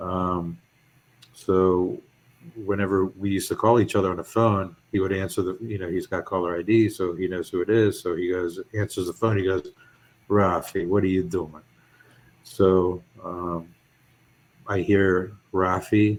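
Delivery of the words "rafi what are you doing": mock Italian-accented voice. Retelling how the father answered the phone: imitating father's italian accent. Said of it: "My father has an Italian accent".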